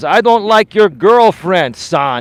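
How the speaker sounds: put-on Greek accent. A son quotes his father's reply to him, in a thick Greek accent. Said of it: "with his thick Greek accent".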